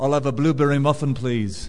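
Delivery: put-on disguised Liverpool accent. Retelling disguising their voice while ordering from a man, put-on liverpool accent. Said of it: "I put on my Liverpool accent".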